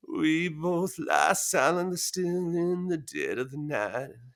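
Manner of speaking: slow, creaking delivery heavy with vocal fry. Speaker demonstrating another way to read the line, with creaky vocal fry. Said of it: "a little bit of vocal fry".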